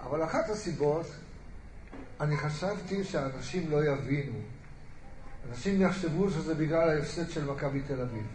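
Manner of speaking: voice full of sadness. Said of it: "אני אומר את זה בעצבות גדולה".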